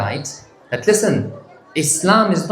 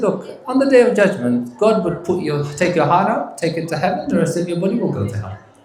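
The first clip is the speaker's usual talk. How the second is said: biting, mocking, very sarcastic tone. Retelling a Shaykh's answer to a questioner: imitating a sarcastic reply. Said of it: "The Shaykh gave a very sarcastic reply".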